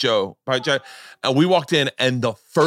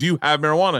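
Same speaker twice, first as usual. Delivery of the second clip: mock pushy, insistent, aggressive, demanding tone; 3 semitones higher than usual. Retelling own past question to a man at a bar: imitating own aggressive asking. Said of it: "And I'm being really aggressive".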